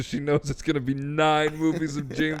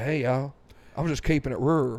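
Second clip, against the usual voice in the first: put-on Texas accent. Joking that George Bush appears, imitating George Bush. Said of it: "He's like".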